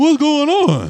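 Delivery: very loud, very high, shrill dopey voice. Retelling how a man talks, doing his goofy dumb voice. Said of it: "his dumb voice is very funny".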